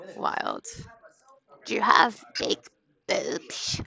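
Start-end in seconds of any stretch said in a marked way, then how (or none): 1.6-3.8 rough, creaky, cartoonish character voice. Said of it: "He sounded like a cartoon".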